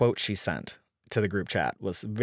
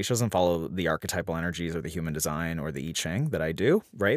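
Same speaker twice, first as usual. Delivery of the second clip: ordinary talk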